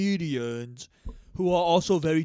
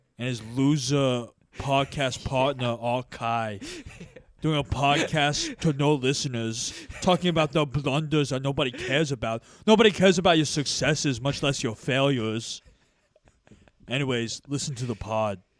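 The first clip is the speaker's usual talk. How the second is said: usual speaking voice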